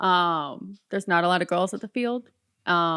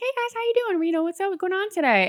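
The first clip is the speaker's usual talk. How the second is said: mock very high, pleasant, bubbly voice; 13 semitones higher than usual. Showing how she greets guys at the register, acting out a bubbly, friendly greeting. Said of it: "in a friendly, pleasant, bubbly voice".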